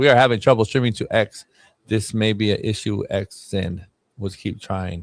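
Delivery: slow, halting, plodding, stilted reading voice. Reading a streaming error notice aloud: reading slowly. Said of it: "You sounded slow".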